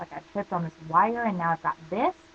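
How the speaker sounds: ordinary talk, nothing marked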